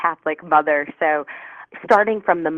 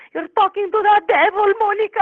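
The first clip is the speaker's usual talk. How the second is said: put-on very high-pitched voice with a Spanish accent. Retelling a worried woman's warning about talking to spirits, imitating a Spanish accent. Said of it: "her going with her Spanish accent".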